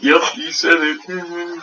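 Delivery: slow, drawn-out, teasing voice. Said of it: "She's sitting there going".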